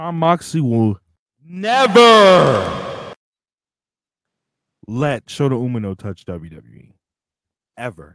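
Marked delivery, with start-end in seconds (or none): 0.0-5.2 loud, very slow, emphatic delivery. Stating a wrestling claim so people will understand: a little louder. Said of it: "I have to say this a little bit louder".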